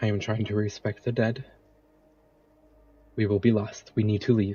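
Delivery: hushed, urgent half-whisper. Asked by a player why he is half-whispering in the woods, [name] replies: [name] half-whispering. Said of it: "Why are you whispering?".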